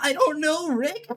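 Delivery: put-on slow, high-pitched stoned drawl. Mira attempts an impression of Rick, but it comes out as a Shaggy voice. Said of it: "that's Shaggy".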